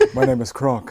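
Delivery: breathy, hushed, whispered character voice. Doing the voice on request: Kronk voice. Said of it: "Do the voice".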